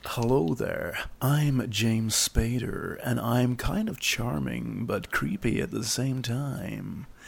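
slow drawl, every word drawn out. Showing a friend an emulation of James Spader's voice. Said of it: "I did try and emulate James Spader's voice".

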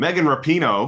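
put-on Yankee accent. Introducing the next case on the docket, saying a name: Yankee accent. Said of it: "I have to say it in a Yankee accent".

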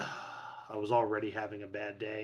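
quiet, low sarcastic deadpan.

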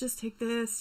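acted-out pleading. Retelling the dad throwing everything from his pocket onto the ground, mock pleading. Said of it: "was just pleading".

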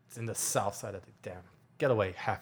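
low, terse, curt, dismissive tone. Alan, who doesn't really want to talk, answers: very curt. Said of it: "very curtly goes".

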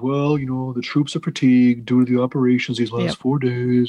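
glum, gloomy, downbeat voice. Retelling another man's reply, in a mock Debbie Downer voice. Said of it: "probably in his Debbie Downer voice".

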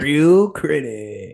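loud, put-on dude-bro voice. Signing off a bit addressed to the dudes; put-on bro voice. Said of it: "if I talk like that for any longer".

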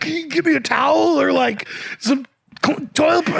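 mock panicky, frantic voice, stumbling mid-word. Retelling a stranger in a washroom asking for a towel: imitating someone freaking out. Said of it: "freaking out".

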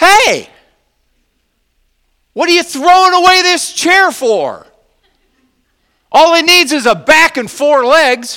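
shrill, very high, booming loud yell. Retelling what Dad yelled on seeing a piece of wood: imitating someone yelling. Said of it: "and he yells".

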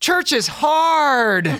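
very high, shrill scream, hard and stretched out. Retelling how she threw up her arms halfway through mass; imitating her scream. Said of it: "screamed at the top of her lungs".

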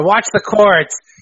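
smarmy, high yell. Retelling a moment as the ambulance rolls over cords: smarmy yell imitating Owen Hart. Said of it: "he just yells in that smarmy shit here".

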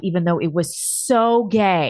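plain

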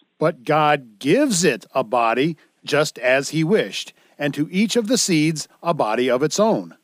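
ordinary delivery

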